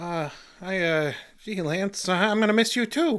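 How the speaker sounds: shy, bashful voice. In a drama, Doghouse answers Lance's offer to shake hands, bashful. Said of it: "What's with the bashful act".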